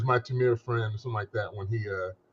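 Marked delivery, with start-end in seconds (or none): none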